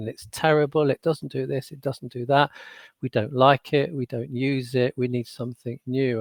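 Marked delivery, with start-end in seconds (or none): none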